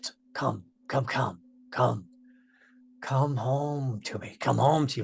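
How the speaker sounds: barely-there, very quiet, hushed voice. Telling a story about a voice heard within the chittering, in a very quiet voice. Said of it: "you hear a very quiet voice".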